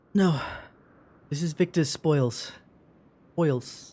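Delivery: put-on British accent. Acting a scene, answering whether this is family's home: British accent. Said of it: "I'm trying to keep my British accent".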